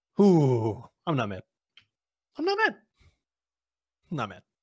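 plainly angry, pointed, swooping delivery. Ranting about someone whose calls go to voicemail, angry. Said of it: "Are you mad?".

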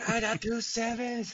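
put-on furious, very high, angry shout. Telling how an angry man yelled at them over the radio, retelling a furious yell. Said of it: "Just yelling".

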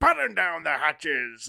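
over-the-top captain voice with big pitch swoops. Imagining Ransom on a boat giving an order: booming Ransom voice. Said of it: "booming delivery that's just so over the top".

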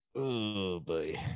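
very hushed, quiet, upset-sounding mutter. A commentator reacts after a co-host points out JR's blunder, sounding upset. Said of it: "you sound like you're upset".

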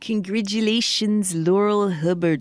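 clumsy put-on New Zealand accent. Congratulating Laurel Hubbard while trying out your accent, in a rough New Zealand accent. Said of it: "That's my uh, New Zealand accent".

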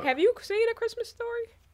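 shocked voice, pitch shooting very high. Talking about a movie with another person, high shocked voice. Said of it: "my voice goes so high when I'm shocked".

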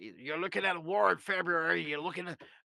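rough, hoarse croak from the throat. Discussing a trending clip of a man, imitating a hoarse voice. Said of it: "I can kind of do the hoarse voice".

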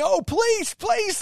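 very high, very loud, shrill, cowardly whining plea. Retelling how a cowardly wrestler begs off: imitating someone begging. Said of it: "begging off".

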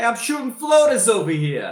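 put-on very high, very loud, swooping New Jersey accent. Imitate the man who gave a four-minute speech, in a Jersey Nick voice with a Jersey accent. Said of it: "a Jersey accent".

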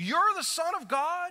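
very high, disbelieving, incredulous tone. Showing how the high priest asked Jesus: incredulous rhetorical question. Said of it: "He says it in an incredulous way".

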